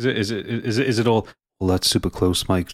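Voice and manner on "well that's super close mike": whispered, hushed Southern golf commentator voice, lower pitched. Imitating the commentary in a golf game: whispered southern golf commentator voice. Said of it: "talking in a whisper".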